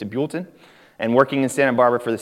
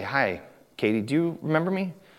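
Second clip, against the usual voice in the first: soft, bashful, sheepish voice; 6 dB quieter than usual. Retelling approaching Katie across the sanctuary, retelling a sheepish greeting. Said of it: "I very sheepishly say".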